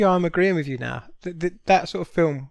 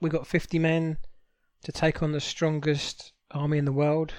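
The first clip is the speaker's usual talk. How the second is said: ordinary delivery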